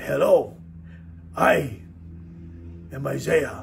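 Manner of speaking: slow, careful, measured, soft breathy whispered voice. A speaker imitates how their young son greeted people, in a Mr. Miyagi-like voice. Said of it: "He kind of sounded like Mr. Miyagi".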